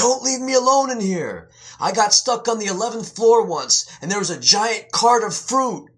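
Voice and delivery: very high, frightened shriek. A narrator voices an old lady patient who wakes in the elevator screaming. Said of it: "[name] picked up an old lady who was asleep in her wheelchair. Even the nurse couldn't wake her. He felt sorry for her as she twitched in her sleep as he rolled her along. Her clothes were old and her".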